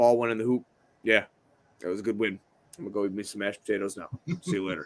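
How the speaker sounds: dull, flat, level monotone drone. Imagining a player's press conference after every single game: flat monotone impression. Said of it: "very monotone kind of guy".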